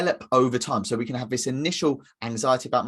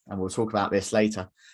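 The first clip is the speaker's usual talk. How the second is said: ordinary talk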